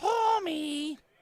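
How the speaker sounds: stretched out, high and loud. Doing a joke impression during commentary: Marge Simpson voice. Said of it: "I can do a Marge Simpson impression".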